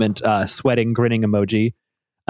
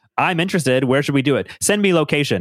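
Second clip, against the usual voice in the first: stiff, machine-sounding robotic speech; 3 semitones higher than usual. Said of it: "I love how robotically Zuck tries to square up".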